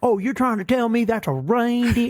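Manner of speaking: very high, small-town southern mayor voice. Retelling a story, the speaker voices the mayor answering a request: imitating a southern mayor. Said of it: "A very southern mayor vibe".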